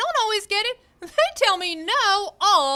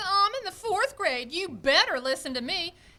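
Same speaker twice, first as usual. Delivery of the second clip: usual speaking voice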